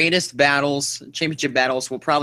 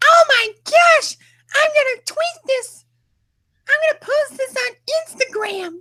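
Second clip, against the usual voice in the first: put-on very high, childlike little girl voice; 4 dB louder than usual. Imagining how he'll react, talking in a little girl's voice. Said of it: "talking in a little girl's voice".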